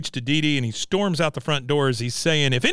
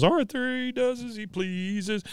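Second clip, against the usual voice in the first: high voice raised a full octave; 6 semitones higher, 6 dB quieter than usual. Retelling a scene while the baby is still crying, voice raised an octave. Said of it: "he kinda raises an octave and he goes".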